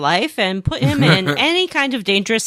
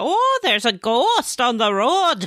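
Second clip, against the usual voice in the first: put-on Wisconsin accent, higher pitch; 4 semitones higher than usual. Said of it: "Are they from Wisconsin?".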